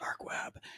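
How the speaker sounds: soft, eerie whisper.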